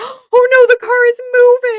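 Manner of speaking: put-on very high, drawn-out, super-scared dog voice. Acting out the shepherd dog when the car starts: imitating a scared dog. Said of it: "super scared".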